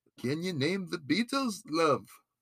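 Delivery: soft and slightly high-pitched. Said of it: "That's my Beatles impression".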